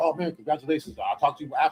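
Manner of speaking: ordinary delivery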